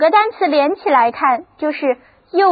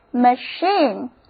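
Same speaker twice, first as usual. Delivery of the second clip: machine said slowly with stress on CHINE. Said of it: "重音放在第二个音节上".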